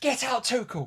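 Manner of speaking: high-pitched, mock angry yell. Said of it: "You were like".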